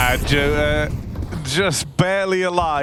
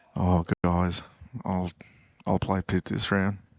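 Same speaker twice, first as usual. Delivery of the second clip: put-on dejected voice, lower and quieter; 9 semitones lower, 7 dB quieter than usual. Imitating a player offering to play Pit: quiet, semi-dejected Yanko Jazzy impression. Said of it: "You just talk real quiet".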